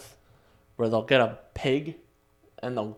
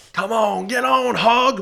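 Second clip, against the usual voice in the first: acted yell, higher-pitched and louder; 11 semitones higher, 10 dB louder than usual. Acting out a rider urging a hog on: acted yelling at a hog. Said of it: "What are you yelling about back there?".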